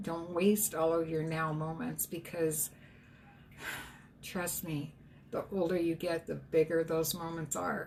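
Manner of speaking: voice close to tears, catching and choking up. Giving advice to listeners, voice choking up. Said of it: "I'm gonna cry".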